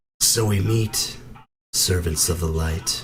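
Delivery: put-on androgynous voice, neither boy nor girl. A figure of unclear age and sex addresses the servants of the light: androgynous voice. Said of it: "The sound of this voice is just as androgynous".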